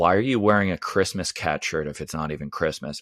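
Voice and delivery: mock, bone-dry, driest low deadpan delivery. Retelling an old lady's question at a tournament, imitating a very dry voice. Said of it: "in the driest voice I've ever heard".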